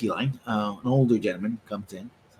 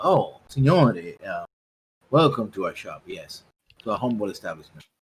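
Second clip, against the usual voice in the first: fawning, groveling, obsequious tone; 3 semitones lower than usual. Voicing a shopkeeper welcoming a rich customer: shopkeeper fawning over a rich customer. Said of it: "he's like".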